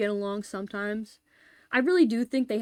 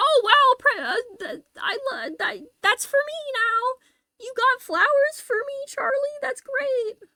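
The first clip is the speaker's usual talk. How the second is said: obnoxious voice, very high and loud; 5 dB louder than usual. Acting out how he cuts in every time Charlie tries to flirt with Brittany, in an obnoxious Alf voice. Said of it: "My fucking obnoxious Alf voice".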